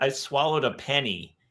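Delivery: put-on lisp like a child. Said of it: "where she's got the little lispy thing".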